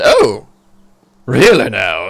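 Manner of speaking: loud, swooping talking-chicken voice. Voicing the thoughts of a chicken that a player hears by magic: voicing a chicken's thoughts. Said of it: "He goes".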